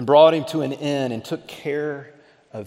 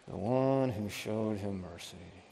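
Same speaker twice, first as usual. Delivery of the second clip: very quiet, hushed words forced through clenched teeth; 5 semitones lower, 13 dB quieter than usual. Retelling a cornered lawyer's answer, acting out clenched-teeth answer. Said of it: "through clenched teeth".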